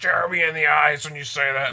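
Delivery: mock heated, angry screaming outburst. Retelling how a comedian screamed at a heckler: retelling her angry screaming. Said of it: "she started screaming at him".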